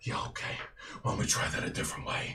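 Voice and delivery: menacing, angry, breathy whisper. Voicing a figure who lands in the street before a guard: angry threatening character. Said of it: "he very much comes stalking towards you".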